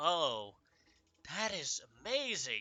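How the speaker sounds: dripping, mocking, heavy sarcasm, pitch swooping. A character handed a pearl of power responds, very sarcastic. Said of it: "she first goes very sarcastically".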